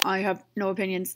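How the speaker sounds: cheap, bad robot voice. Voicing a robot's reply in a bad robot voice. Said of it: "That's a really bad robot voice".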